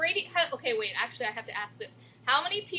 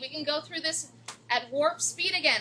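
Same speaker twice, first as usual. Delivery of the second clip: ordinary talk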